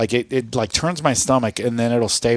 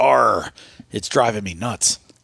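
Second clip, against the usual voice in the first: put-on pirate voice. Telling a joke, voicing the pirate asking the bartender: pirate voice. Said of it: "So a pirate walks into a bar".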